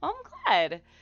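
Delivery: voice cracking up high, breaking mid-phrase. Replying to a message someone sent in: voice cracking. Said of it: "my voice just cracked".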